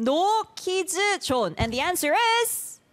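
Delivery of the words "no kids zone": put-on Korean accent, pitched up. Showing a guest how to say the phrase, in a Korean accent. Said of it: "Korean accent".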